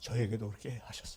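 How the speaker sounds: hushed, soft whisper.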